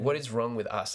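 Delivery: ordinary talk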